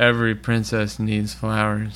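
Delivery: put-on deadpan monotone. Retelling a story where a magician arrives, acting out his line in mock-monotone. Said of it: "he says in the most monotone uncaring voice on earth".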